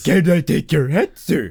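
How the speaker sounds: loud, big cartoon character voice. Quoting a cartoon line again: Patrick Star voice. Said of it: "my brain thinks that's SpongeBob".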